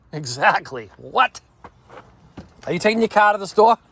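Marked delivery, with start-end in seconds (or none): 2.6-3.7 dropped-r Boston accent, very high and fast. Showing viewers how he'd ask his wife something, in a Boston accent. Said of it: "Watch how weird this sounds when I do use it".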